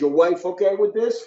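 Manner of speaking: high-pitched yell. Retelling a call where he asked about the wife: retelling own yell. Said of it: "And I'm yelling".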